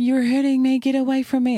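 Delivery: put-on very high, shrill, fearful screaming. Retelling a hypothetical confrontation at a stream: imitating someone screaming. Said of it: "they start screaming".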